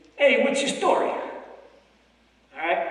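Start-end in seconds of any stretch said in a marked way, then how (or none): 0.2-1.1 fast, loud New York accent, words mashed together. Showing the audience a common New York greeting: fast New York speech, words run together. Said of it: "four words pushed together into one".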